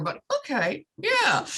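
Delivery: very high, forced, squeezed through gritted teeth. Mother retelling cleaning the bathroom floor, acting out a clenched-teeth reply. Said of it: "I say through clenched teeth".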